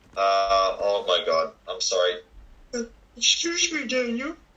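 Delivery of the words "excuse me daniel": put-on old man voice, much higher, faster. Speaker addresses Daniel in the voice of Herbert from Family Guy. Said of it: "the old man from Family Guy?".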